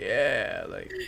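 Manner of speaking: put-on laid-back, stoned old man voice. Voicing an old man woken from sleep on the bed: old stoner voice. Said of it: "He's just like".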